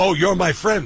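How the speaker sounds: New York Staten Island accent. Saying to your friend that he is your friend, in a Staten Island voice. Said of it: "I'll say that in the Staten Island voice".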